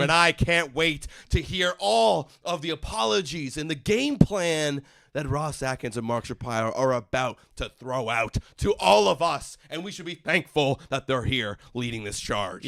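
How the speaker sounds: ordinary delivery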